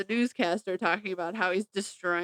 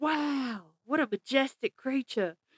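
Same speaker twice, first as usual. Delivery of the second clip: bad put-on Australian accent, wildlife narrator voice; 4 semitones higher than usual. Narrating her son as an animal on safari, terrible Steve Irwin Australian accent. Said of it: "in my best terrible Australian accent, like I just did".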